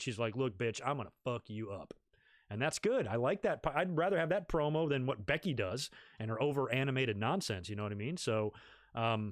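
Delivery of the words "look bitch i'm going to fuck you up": flat, very monotone delivery with no pitch rise. Describing a woman's promo, speaker quotes her threat in a Jake Roberts-style monotone. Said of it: "talking in a very monotone, you know, Jake Roberts type of voice".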